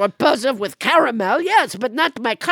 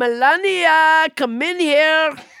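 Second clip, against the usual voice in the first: put-on French-accented voice; 7 semitones higher, 4 dB louder than usual. Playing French Trump in a comic interview: French Trump voice. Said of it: "Why are you calling your wife?".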